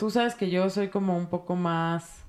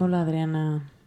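put-on soft, velvety, silky voice. Greeting the other speaker at the start: put-on soft velvety voice. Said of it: "¿Por qué me hablas así tan suavecito?".

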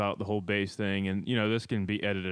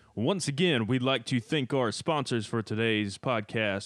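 put-on radio announcer voice; 3 semitones higher than usual. Thanking the podcast's pizza sponsor, in a put-on radio announcer voice. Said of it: "let me do this in my radio voice".

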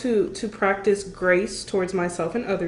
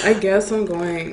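mock-dry, flat delivery, louder; 3 dB louder than usual. Teasing a co-host about how they answered, mimicking a dry reply. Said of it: "You're just like".

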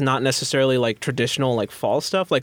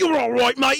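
put-on Australian accent, higher pitch; 12 semitones higher than usual. Retelling what bar-fight guys from Australian videos say: imitating Australian bar-fight guys. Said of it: "my Australian accent practice just comes from guys being like".

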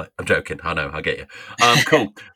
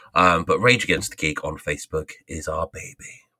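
very low late-night radio DJ voice; 7 semitones lower, 3 dB quieter than usual. Plugging the podcast's Facebook page to listeners: late-night radio host voice. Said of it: "I sounded like a late night radio host then".

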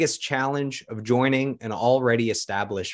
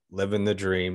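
super flat, completely monotone voice; 4 semitones lower, 3 dB quieter than usual. Imitating an employee who never looked happy answering a daily greeting, super monotone. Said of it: "like super monotone".

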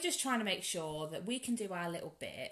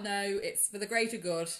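ordinary talk, nothing marked

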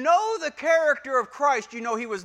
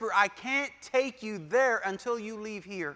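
hushed, breath-only soft stage half-whisper; 4 semitones lower, 5 dB quieter than usual. Acting out the Lord's words to listeners: imitating a half-whisper. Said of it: "we would hear him whisper".

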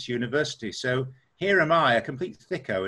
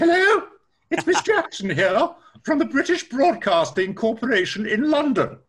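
very high, proper and prim telephone voice; 12 semitones higher, 6 dB louder than usual. Retelling a phone call from an HR lady: prim voice of Miss Jackson. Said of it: "this very prim voice says".

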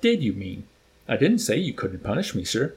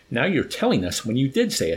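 plain

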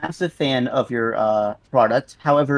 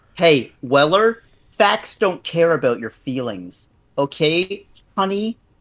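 tightly wound, uptight voice; 4 semitones higher than usual. Answering an industry professional who called them a scammer, uptight right-wing conservative impression. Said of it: "that is my uptight right-wing conservative impression".

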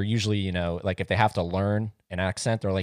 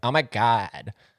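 put-on Southern California Valley Girl accent; 2 semitones higher than usual. Explaining what the Valley Girl accent is, in a Valley Girl accent. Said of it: "Like a Valley Girl kind of thing".

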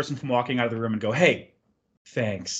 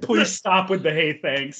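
put-on angry man voice, higher pitched; 4 semitones higher than usual. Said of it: "stone-faced, like, pissed off".

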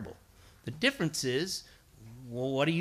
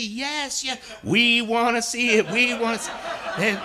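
very slow, drawn-out, loud, high screaming; 9 semitones higher, 9 dB louder than usual. Retelling how they screamed back at Mr. Falk, retelling them screaming. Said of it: "They're screaming at me".

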